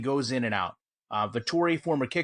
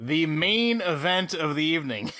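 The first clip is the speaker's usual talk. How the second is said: slow speech with giggles breaking through the words. Announcing the main event while trying to keep it together: laughing while talking. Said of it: "You can't even say it without laughing".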